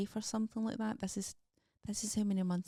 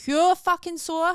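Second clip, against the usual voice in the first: very loud, rising, sore, pained shout; 9 semitones higher, 14 dB louder than usual. Speaker describing a painful shoulder stretch with a house coat tie: shouting. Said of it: "Sorry for shouting".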